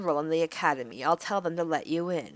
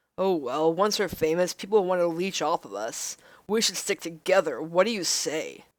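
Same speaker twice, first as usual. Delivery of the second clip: obnoxious, jerky guy voice. Voicing a comic character who wants them to stick together: douchey guy voice. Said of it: "I'm giving him the perfect voice".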